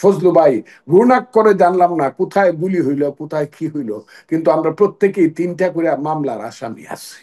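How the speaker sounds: ordinary delivery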